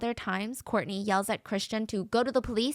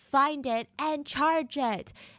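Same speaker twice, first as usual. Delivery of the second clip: mock screaming, much higher; 4 semitones higher than usual. Speaker retelling an argument, quoting the woman, retelling a screamed demand. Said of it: "stop screaming".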